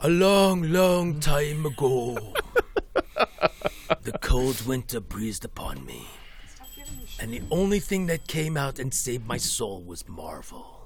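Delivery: deliberately deep, low put-on voice. Answering whether DC or Marvel: put-on deep voice. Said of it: "I'm going to go into my deep voice".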